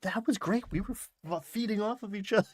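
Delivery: high, thrilled, eager, excited gush. Retelling what Wick said while walking away: imitating excited Wick. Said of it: "he's so excited".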